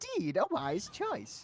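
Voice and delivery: high put-on character voice. Showing the other caster the matching voice: Heimerdinger voice. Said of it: "it's the same as my Heimerdinger".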